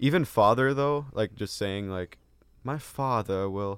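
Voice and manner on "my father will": sudden slip into put-on British accent. Discussing formal words for a parent, slipping into a British accent. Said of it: "why'd you go into a British accent?".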